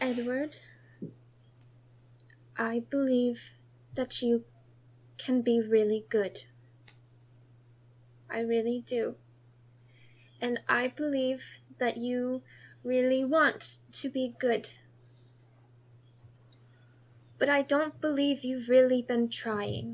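hushed, very quiet speech. Renaya walks over to Edward and says this to him very quietly. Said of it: "she's going to say it very quietly".

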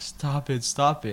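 mock begging, high and drawn-out. Retelling a man on his knees during a beating, imitating someone begging. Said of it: "was like begging".

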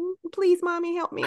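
put-on very high, sheepish, pleading little-kid voice. Retelling how a child asks for help with head hung low: imitating a sheepish child pleading. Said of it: "With their head hung a little low".

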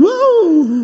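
ecstatic, very loud, high-pitched whoop.

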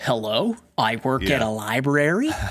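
American accent impression. Describing an Australian actor who sounds American in a movie; imitating his American accent. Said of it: "he's got that voice where he's just like".

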